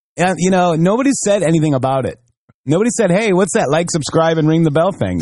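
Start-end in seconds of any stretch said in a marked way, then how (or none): none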